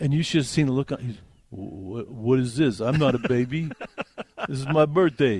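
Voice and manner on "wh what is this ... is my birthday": slow, drawn-out voice, words stretched. Retelling a TV scene where a dad reacts to a joke: Sylvester Stallone impression. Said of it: "it's my Sylvester Stallone".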